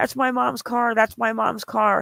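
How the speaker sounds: hysterical, beside herself, repeated outburst. Retelling someone running up to her mom's car: imitating someone hysterical. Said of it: "she goes running up hysterically".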